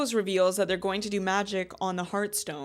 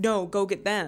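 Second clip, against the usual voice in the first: mock-screaming, slower. Recapping a show's plot, acting out a character's line, imitating a scream. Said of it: "but she's like screaming".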